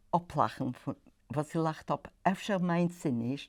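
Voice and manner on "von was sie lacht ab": usual speaking voice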